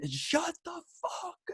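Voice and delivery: put-on hushed, breathy stage-whisper yell. Retelling a heckler at the game screaming at him: imitating a heckler screaming. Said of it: "this guy just starts screaming".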